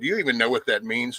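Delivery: ordinary talk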